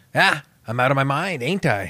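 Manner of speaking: tossed-off, cocky, swaggering delivery. Retelling a Braveheart scene with a spin on a horse: cocky Mel Gibson line. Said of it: "he does this cocky classic".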